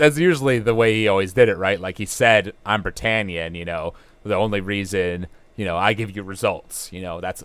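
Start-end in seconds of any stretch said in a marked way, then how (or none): none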